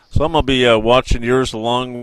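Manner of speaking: plain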